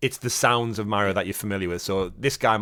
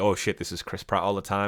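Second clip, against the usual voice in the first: ordinary delivery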